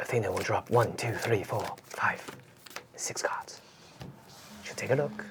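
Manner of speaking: whispered, hushed European commentator accent. Commentating a card game, impersonating favorite european commentators: european commentator accent. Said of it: "I'm just impersonating my favorite European commentators right now because I love that accent".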